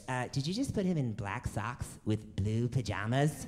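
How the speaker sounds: gentle cartoon character voice. Quoting what she said while he was dressing his kid, in a South Park cartoon voice. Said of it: "She sounds like a character from South Park".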